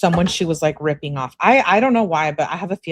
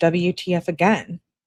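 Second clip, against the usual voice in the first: ordinary talk, nothing marked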